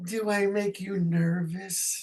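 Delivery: sweet, playful flirty tone. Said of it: "said to me in a cute sort of flirty way".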